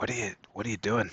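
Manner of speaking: very quiet, hushed. Narrating him questioning someone on Yek's throne, unheard by the room: very quiet, hushed. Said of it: "very quietly, so that the rest of the room can't hear".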